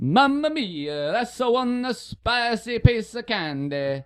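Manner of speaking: very high, put-on Italian accent with a lilt. Urged by friends to try accents, a speaker goes first: put-on italian accent. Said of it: "That's like an Italian".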